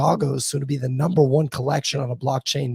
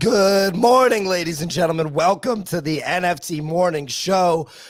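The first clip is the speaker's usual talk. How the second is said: wrecked voice, higher pitch; 4 semitones higher than usual. Opening the morning show for listeners, voice in the gutter. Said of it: "My voice is in the gutter".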